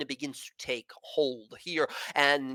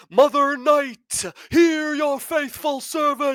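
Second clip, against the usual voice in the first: impossibly loud, booming, high priestess-style voice; 13 semitones higher, 8 dB louder than usual. Narrating a game scene, a woman opens her eyes and speaks in an impossibly loud voice. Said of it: "there's this impossibly loud voice that comes from her".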